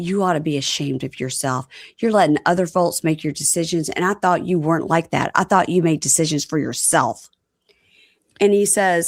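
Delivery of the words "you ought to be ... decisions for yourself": usual speaking voice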